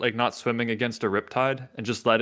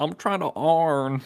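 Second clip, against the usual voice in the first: put-on Delco accent, pitched higher; 4 semitones higher than usual. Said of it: "his Delco accent".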